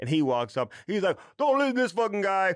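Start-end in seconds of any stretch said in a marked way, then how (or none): 1.4-2.5 terrible, very high put-on voice. Retelling how he walked up to a scout telling kids how to line up, terrible Dion impersonation. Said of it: "that was a terrible impersonation of Dion".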